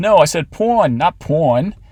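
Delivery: put-on thick New York old-lady accent. Reading an overheard old lady's question: heavy new york accent. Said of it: "an old lady with a heavy New York accent".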